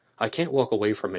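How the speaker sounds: usual speaking voice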